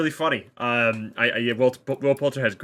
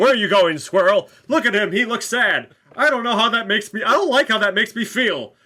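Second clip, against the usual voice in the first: pitched-up, high, little superhero voice; 9 semitones higher, 4 dB louder than usual. Praising an actor's Adam Warlock, the speaker quotes his accent: Adam Warlock superhero accent. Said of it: "his little superhero accent that he does".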